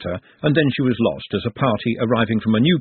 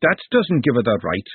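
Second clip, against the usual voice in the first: plain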